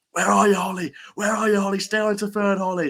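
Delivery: put-on, very high, excited cheering shout. Recalling watching a race on the big screen with a friend: retelling shouting at a horse. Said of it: "we're just shouting".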